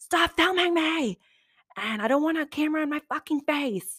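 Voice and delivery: high-pitched, screamed outburst. Recounting what a filmed man said to the cameras, retelling his scream. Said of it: "he's screaming".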